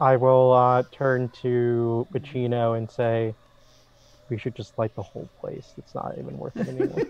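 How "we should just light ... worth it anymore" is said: very quiet, barely voiced whisper, close in. Speaking in character to Pacino during the game: whispering. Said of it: "I just whispered that to".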